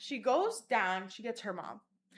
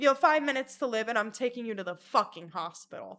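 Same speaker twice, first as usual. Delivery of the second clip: normal talking voice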